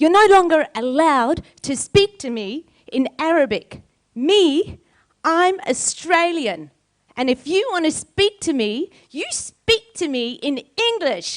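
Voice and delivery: acted, very high, furious, indignant little girl voice. Retelling storming up to her mum as a four-year-old: imitating an angry little girl. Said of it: "very angry at my mum".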